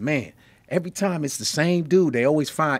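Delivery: ordinary delivery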